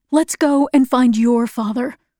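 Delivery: ordinary delivery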